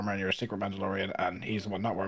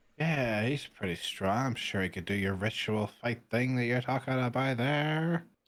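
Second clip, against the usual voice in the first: acted, exaggerated drunken-sounding speech; 3 semitones higher than usual. A tabletop player's character, downing drinks and answering Maru, pretending to be drunk. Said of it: "trying to be more drunk than I am".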